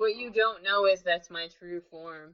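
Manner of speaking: ordinary talk, nothing marked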